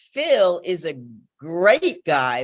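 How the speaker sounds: strong stress on great, jumping out. Asking which word stood out in a sentence, stress on great. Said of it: "which word stood out? ... Great. ... Right".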